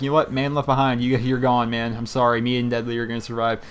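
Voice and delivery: ordinary talk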